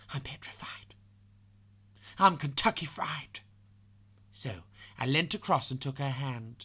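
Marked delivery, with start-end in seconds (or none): 0.1-3.4 put-on whispering voice. Retelling a nervous rival's words under her breath: imitating someone whispering. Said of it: "I could hear her whisper".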